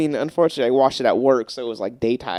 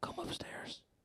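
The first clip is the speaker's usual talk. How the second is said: quiet, hushed, breathy little whisper. Imitating the unseen monster calling someone, in a quiet little whisper. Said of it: "it's like a quiet, like little whisper. It would be like".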